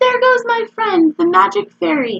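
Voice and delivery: very high, small, squeaky little voice. Narrator reads Henry speaking on stage as everyone cheers, Henry's little squeaky voice. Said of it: "said in his little squeaky voice".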